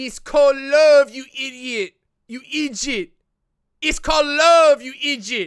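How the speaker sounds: put-on Quebec French accent. Speaker tries an accent for a viewer from Quebec: Quebecois accent attempt. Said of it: "Can I do can I do the the Quebecois accent?".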